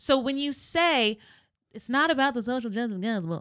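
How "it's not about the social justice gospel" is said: funny, jeering, mocking put-on voice. Quoting people who dismiss the social justice gospel: imitating critics in a comical voice. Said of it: "say it in that voice 'cause it's really comical".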